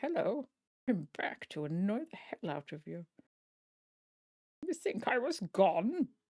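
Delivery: put-on upper-class English gentleman's accent. Giving their shaking hand its own voice: a posh British male voice. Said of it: "my hand shaking apparently has a posh British male voice".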